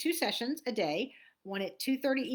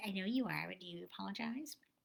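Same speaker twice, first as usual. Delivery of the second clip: put-on little boy voice, quieter; 2 semitones lower, 8 dB quieter than usual. Recalling a childhood apology, imitating a little boy. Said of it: "And that's how he sounded".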